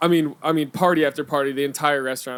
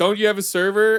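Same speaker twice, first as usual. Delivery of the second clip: mock curt, rude snapping tone, higher; 6 semitones higher, 3 dB louder than usual. Retelling snapping at a customer while busy bartending: imitating own curt snap. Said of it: "I said it like that".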